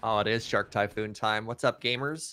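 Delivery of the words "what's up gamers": put-on cringey dad voice. Greeting the others jokingly at the start of a turn: mock dad gamer greeting. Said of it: "That was the most "Are you winning, son? What's up, gamers?"".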